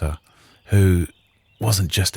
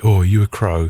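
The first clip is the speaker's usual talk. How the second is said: dim, dopey, idiot-sounding put-on voice; 4 dB louder than usual. Dressed as a rook at a Samhain party, quoting people who approach, in a put-on voice. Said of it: "I don't know why I'm putting on that voice".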